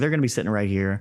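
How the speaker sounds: casual, unbothered, offhand, nonchalant. Retelling what he said while out fishing, imitating someone nonchalant. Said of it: "so nonchalant".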